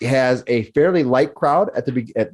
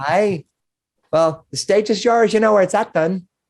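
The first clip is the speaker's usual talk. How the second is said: bubbly, raised-pitch tone; 7 semitones higher than usual. A storyteller voices the woman serving drinks, welcoming a performer: bubbly woman serving drinks. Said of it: "this bubbly woman who is serving drinks".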